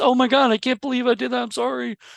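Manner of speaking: acted solemn, earnest, high, very serious tone. Imitating a reality show person apologizing: imitating a very serious apology. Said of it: "they're supposed to be really serious".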